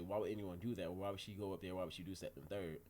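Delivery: plain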